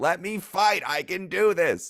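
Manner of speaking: very high-pitched, shrill yelling with full force. Voicing a character still unable to break a hold: yelling. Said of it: "still yelling, like".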